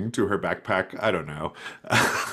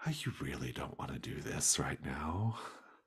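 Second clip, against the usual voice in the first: soothing, gentle, very soft half-whisper; 5 semitones lower, 14 dB quieter than usual. Voicing a half-whispering creature pulled from a pocket, speaking to another character in a soothing half-whisper. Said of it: "The gloam is whispering to you in a soothing voice".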